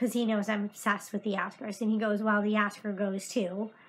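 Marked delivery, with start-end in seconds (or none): 2.2-3.7 real mean, angry, jabbing tone. Retelling what he said on the phone: retelling a mean, angry remark. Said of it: "he was real mean and angry".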